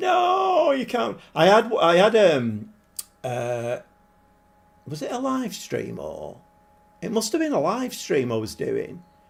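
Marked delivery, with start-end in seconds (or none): 0.0-1.2 shrill, very high screaming yell. Imagining the chat reacting to a team choice: imitating chat screaming. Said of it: "screaming at the monitor".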